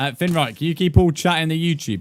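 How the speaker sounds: high-pitched, loud calling voice.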